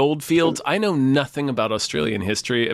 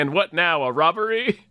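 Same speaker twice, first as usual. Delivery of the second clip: put-on wacky voice, higher; 4 semitones higher than usual. Retelling a film character's line: imitating a wacky line delivery.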